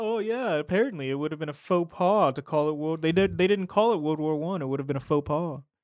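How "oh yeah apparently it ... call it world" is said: loud, put-on, pompous, pretentious know-it-all tone. Retelling how a character talked, imitating someone trying to sound smart. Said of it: "trying to sound so fucking smart".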